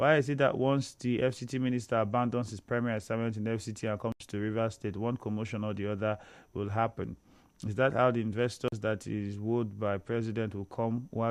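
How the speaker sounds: normal talking voice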